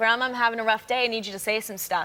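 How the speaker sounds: ordinary delivery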